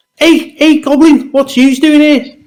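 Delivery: put-on Scouse accent. A player's character greeting a goblin in a tabletop game, Scouse accent. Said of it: "maybe it's your Scouse accent".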